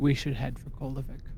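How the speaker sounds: dual-toned, layered two-tone character voice. Narrating a character who speaks as she walks toward you, in a two-toned voice. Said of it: "she says in a two toned voice".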